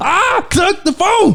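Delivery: acted eccentric professor voice. Retelling what the brother said about the phone: Professor Klump voice. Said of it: "he sound like a Professor Klump from the Nutty Professor".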